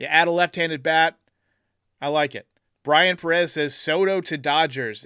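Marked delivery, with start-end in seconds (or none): none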